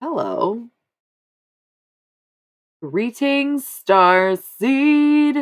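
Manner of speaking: shrill, booming, very high yelling with drawn-out word. The speaker greets the audience, yelling. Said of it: "Sorry if I was yelling".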